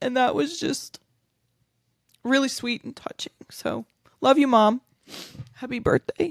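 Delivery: crying, high teary voice breaking. Speaker addresses their mom on her birthday, crying. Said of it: "I'm crying now".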